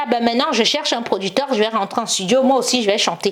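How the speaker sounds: plain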